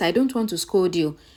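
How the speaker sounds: ordinary delivery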